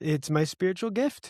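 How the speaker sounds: put-on, tongue-in-cheek sarcasm, clearly not meant. Quipping about a mother calling sarcasm the family love language: mock sarcastic. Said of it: "he said sarcastically".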